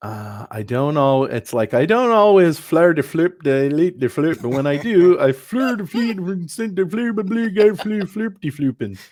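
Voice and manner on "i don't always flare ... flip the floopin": loud, high-pitched babbling. Reading out a meme to the others: Swedish Chef voice. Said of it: "You do a better sh-, Swedish chef".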